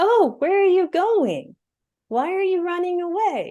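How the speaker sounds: very high-pitched demon voice. Retelling how a demon spoke out of a woman's mouth as they ran, high-pitched demon voice. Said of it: "speaks out of her mouth at a higher pitch than her voice is".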